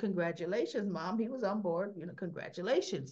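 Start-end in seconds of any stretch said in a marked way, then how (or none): none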